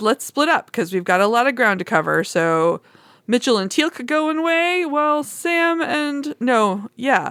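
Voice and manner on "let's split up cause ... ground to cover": plain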